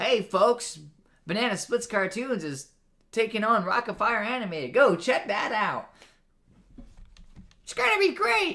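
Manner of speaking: high call with Southern hint. Asked to do the Billy Bob voice, the speaker does the Billy Bob voice. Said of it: "I feel like I should work more Southern into that one".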